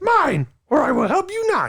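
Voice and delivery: very high, loud voice with big swooping pitch swings. Wishing for a stick as a prop, launching into a Yoda impression. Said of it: "my yoga impression".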